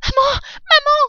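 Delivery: very high, out-of-breath, loud voice. Narrator reading a story, a son running home to his mother: crying out breathlessly. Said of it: "s'écria-t-il à bout de souffle".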